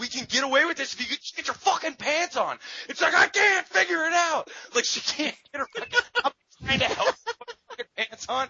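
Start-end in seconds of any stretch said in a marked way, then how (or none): 0.0-2.6 play-acted frantic, panicked, urgent pleading tone. Retelling what he said to her while lights shone nearby, re-enacting panic. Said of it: "as I'm panicking".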